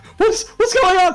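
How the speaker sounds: panicked screaming. A game master voices a crowd of panicking people, panicked screaming. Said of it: "a whole bunch of voices screaming".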